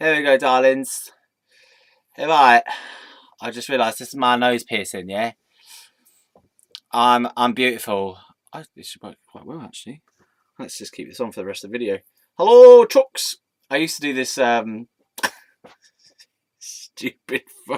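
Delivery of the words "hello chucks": very high, very loud northern English accent. Recording a video, doing a greeting they used to do: northern accent. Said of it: "just a northern type of accent".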